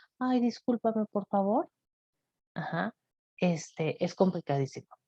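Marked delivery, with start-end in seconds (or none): 0.2-1.7 meek, timid, soft submissive voice. Showing how not to answer someone who yells at you, in a meek passive voice. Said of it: "con la voz pasivita de".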